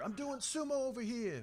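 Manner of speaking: put-on very high-pitched, slow, drawled New York accent. Joking about a sumo competitor from New York: voicing Oscar in a New York accent. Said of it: "Oscar does not sound like that at all".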